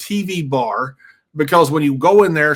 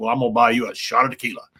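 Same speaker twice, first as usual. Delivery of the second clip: put-on baritone, lower and quieter; 4 semitones lower, 3 dB quieter than usual. Retelling what Vince said to him on his birthday, in Vince's baritone voice. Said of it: "that baritone voice".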